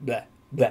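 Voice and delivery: vocal warm-up blah blah syllables. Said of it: "you'll feel like an idiot going".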